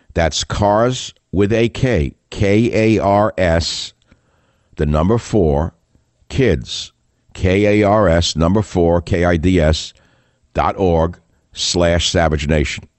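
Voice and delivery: unhurried delivery. In an ad read, spelling out a web address for listeners: speaking slowly. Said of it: "I'll say it slowly".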